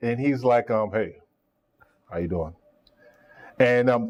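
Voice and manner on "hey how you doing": very low, flat, gruff voice. Retelling the coach's first words to him: imitating Stump Mitchell's gruff flat tone. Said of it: "but really gruff".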